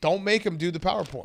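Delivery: normal talking voice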